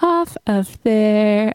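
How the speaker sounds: talking very slowly.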